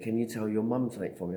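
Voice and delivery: ordinary talk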